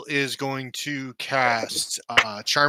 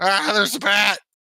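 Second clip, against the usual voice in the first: high, panicked, shrieking scream; 7 semitones higher, 4 dB louder than usual. Playing a character running out of the bush at a bat: screaming in panic.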